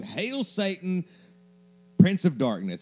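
high-pitched, shrill scream. Imagining a scenario on a plane, screaming back at the other speaker. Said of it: "I'm screaming it at you".

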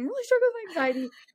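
very high, bawling sob through tears. Retelling sitting down with the coaches, acting out bawling.

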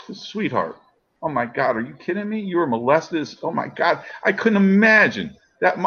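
tearful, crying while talking.

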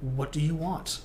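normal talking voice

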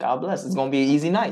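plain

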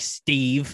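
affronted, indignant scorn. Joking about how to make fun of Steve, indignant "Steve". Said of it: "say it with like indignance".

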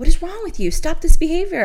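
mock scolding yell, very high-pitched. Describing waking up angry, she is retelling yelling at herself. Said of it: "I'm like yelling at myself".

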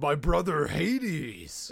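put-on high, deranged, unhinged ranting. Retelling a scene where a character is losing his mind: imitating a man losing his mind. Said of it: "losing his mind".

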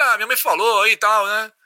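put-on slick, streetwise hustler way of talking. Retelling a phone call to a thief: imitating own streetwise voice. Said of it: "Meio querendo dar uma voz de malandro".

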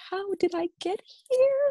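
high, panicked squeal, freaking out inside.

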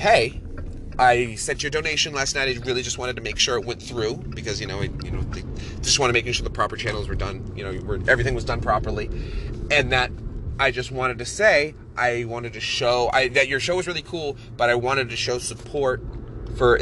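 ordinary delivery

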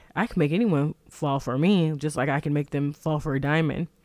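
plain

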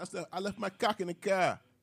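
put-on Boston accent. Telling how he was frisked getting into a club, in a Boston accent. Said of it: "I used my Boston accent".

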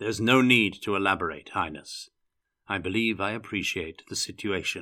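ordinary delivery, nothing marked

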